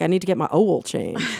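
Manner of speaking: oil pronounced owel, Texas style. Retelling how her mother now pronounces a word: imitating mother's Texas pronunciation. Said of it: "now she says words like "owel,"".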